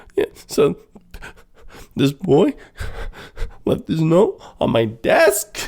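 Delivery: high, halting crying voice breaking mid-phrase. Retelling a movie scene where the girl is crying: imitating crying. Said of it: "when the girl is crying and she's like".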